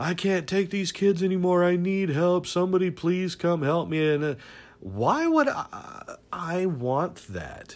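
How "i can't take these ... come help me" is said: high, whiny complaining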